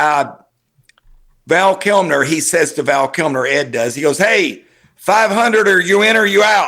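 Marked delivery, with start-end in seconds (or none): 4.2-6.7 brash, bold, pushy delivery. Retelling a poker scene where Ed Bailey challenges Val Kilmer: retelling Ed Bailey's bold challenge. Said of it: "just real bold to him".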